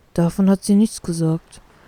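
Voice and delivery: mumbling, muttering thoughtfully and pensively. Reading a story aloud, a character lets a secret slip: mumbling thoughtfully. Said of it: "nuschelt der Mink nachdenklich".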